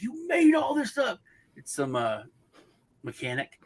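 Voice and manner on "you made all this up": put-on actor yelling, pitched higher. Retelling a movie clip where a character yells at a mechanic: imitating Jim Carrey yelling. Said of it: "yelling at the guy".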